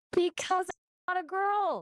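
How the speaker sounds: high shrill yelling. Arguing with a friend on a call, yelling. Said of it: "why are you yelling at me".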